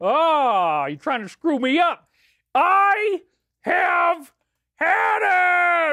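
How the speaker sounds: stretched "Ah", rising. Speaker slips into the Angry Daddy character, in the Angry Daddy voice. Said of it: "Angry Daddy is in the house".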